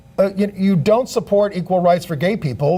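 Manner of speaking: plain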